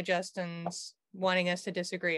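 ordinary talk, nothing marked

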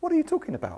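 gentle voice, high and soft, questioning lilt.

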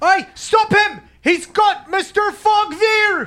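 very shrill, very loud, slow drawn-out shout. Voicing the two casters up top as a fog cloud appears: yelling as the casters. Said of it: "just yell".

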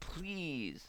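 put-on deep begging voice. Retelling begging a dealer for heroin: imitating a real deep plea. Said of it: "say a real deep, like".

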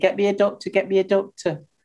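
ordinary talk

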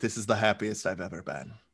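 very low, soft, dour deadpan delivery. Acting out how a guy said it, deadpan: mock deadpan. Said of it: "deadpan with like a dour face".

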